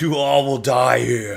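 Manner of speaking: screaming. Voicing a figure lifting his arms up: screaming. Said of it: "lifting his arms up and screaming that".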